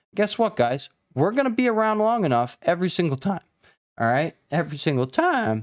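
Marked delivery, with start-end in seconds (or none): 4.5-5.7 cracked, breaking voice on the words. Addressing the channel's viewers, with the voice cracking. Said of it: "Voice cracked there".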